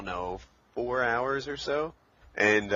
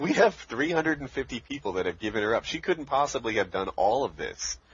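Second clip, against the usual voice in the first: usual speaking voice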